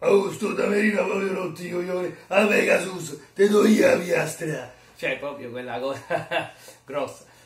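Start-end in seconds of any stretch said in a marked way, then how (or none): 0.0-4.7 high, loud put-on tough guy voice. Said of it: "la triade quando dice".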